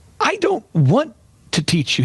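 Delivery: deliberate, stretched-out, sing-song high voice. Retelling a phone call with a PR consultant, imitating Michael Levine's voice. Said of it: "He talks like that".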